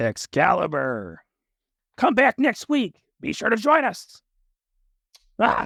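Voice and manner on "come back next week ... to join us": very high-pitched TV announcer voice. Discussing best television announcer awards with another speaker, Excalibur impression. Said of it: "That's my Excalibur impression".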